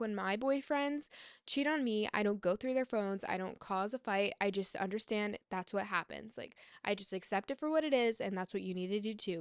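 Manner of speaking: ordinary talk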